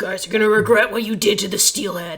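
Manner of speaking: loud, menacing, snarled growl like a beast. Game master voicing an enemy turning on the party after an attack, growling out loud. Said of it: "he growls out loud".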